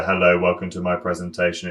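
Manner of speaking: low, flat, level, tuneless monotone. Showing how a presentation sounds when the pitch is monotonous: flat monotone delivery. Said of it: "It's all kind of flat".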